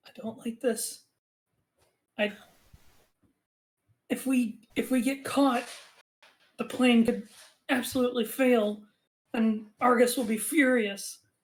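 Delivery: secretive, fully voiced stage whisper. Voicing a nervous conspirator overheard in the dark: half-whispering. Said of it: "you hear one of them whispering".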